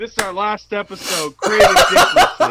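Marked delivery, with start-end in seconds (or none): 1.4-2.5 high-pitched, loud, belted-out cartoon lion voice. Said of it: "I just sounded like Snagglepuss".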